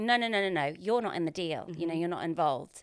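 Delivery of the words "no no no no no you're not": ordinary delivery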